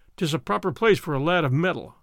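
plain

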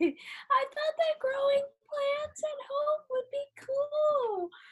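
very high, top-of-the-range voice. Answering a game prompt about something you thought would be cool: highest possible voice. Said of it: "in your highest voice".

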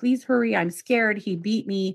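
put-on sobbing, pleading tone. Retelling a caller's plea to a police officer: imitating a sobbing plea. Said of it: "she's begging them and sobbing".

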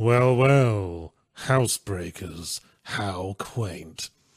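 very slow, heavily sarcastic drawl, well stretched. Retelling a game aside where Garrett mutters to himself: imitating Garrett's sarcastic voice. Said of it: "his really sarcastic voice".

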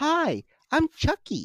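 very high, polite customer-service voice. Quoting a Twitter joke about Chucky, in Chucky's customer service voice. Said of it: "Chucky's customer service voice".

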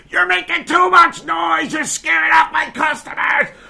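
very high, ragged, rough screeching. Retelling how a lady downstairs screamed about noise: imitating a woman screaming. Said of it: "this lady's just screaming at me like".

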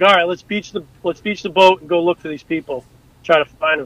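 ordinary talk, nothing marked

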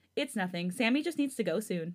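ordinary delivery

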